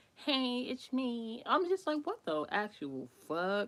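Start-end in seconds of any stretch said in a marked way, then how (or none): 0.2-1.4 put-on babyish voice, high. Retelling a voicemail a guy left, the speaker imitates his put-on baby voice.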